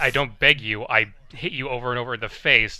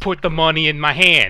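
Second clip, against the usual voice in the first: put-on little girl voice, higher and louder; 5 semitones higher, 6 dB louder than usual. Imitating the littlest sister from the Proud Family cartoon demanding money: Proud Family little sister voice. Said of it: "the littlest gross sister from the Proud Family cartoon".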